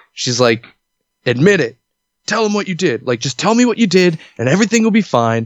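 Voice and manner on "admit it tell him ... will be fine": put-on, high, angry, demanding yelling. Retelling being yelled at by the principal: imitating the principal yelling. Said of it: "the principal's just fucking yelling at me".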